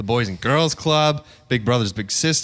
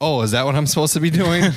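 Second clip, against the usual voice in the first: cheeky, snarky, sarcastic tone; 3 semitones higher than usual. Retelling own reply to a coworker in a work meeting: imitating own snarky reply. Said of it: "in a snarky manner".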